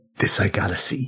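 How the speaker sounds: hushed whisper under the breath. A player nudges a companion with an elbow during the scene, whispering. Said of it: "kind of whisper".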